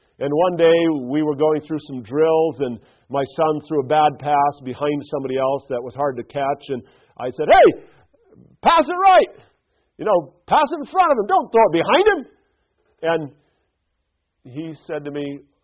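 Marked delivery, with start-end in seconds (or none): 7.5-12.2 very high, loud shouting. A coach retelling what he called out to his son during drills: retelling a yell. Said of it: "Why are you yelling at me?".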